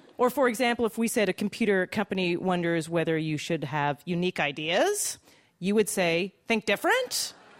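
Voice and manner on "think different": "different" said with rising, question-like tune at end. Showing the intonation of a computer company's slogan: pitch rising on different. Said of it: "So you're going to go up on the end like that".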